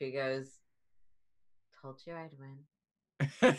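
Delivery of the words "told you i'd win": slow, private aside to oneself. Voicing a character finishing off a foe: said under her breath. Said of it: "Just under her breath".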